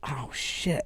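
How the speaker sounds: whispered.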